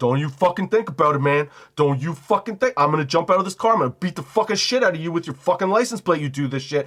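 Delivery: mock furious, savage, out-of-control rage. Acting out a driver threatening someone about to cut in: acting out savage road rage. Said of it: "getting savagely mad".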